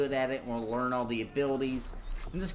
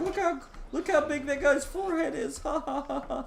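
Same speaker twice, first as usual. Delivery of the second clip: very high, mocking, giggling through the words; 13 semitones higher than usual. Retelling how she reacted to a chat viewer bringing gifts, imitating someone laughing. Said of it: "she was like laughing".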